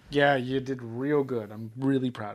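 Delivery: sarcastic-sounding praise. Talking to themself: sarcastic-sounding praise. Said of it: "even though it sounded like it".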